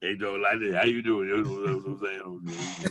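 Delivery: put-on very deep Cajun accent. Making fun of the guy from LSU you say you hate, in an Ed Orgeron impression. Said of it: "Sound like Bobby Boucher".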